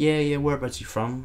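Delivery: non-native broken English. Retelling what a kid asked on meeting, imitating broken English. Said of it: "this is all really broken English".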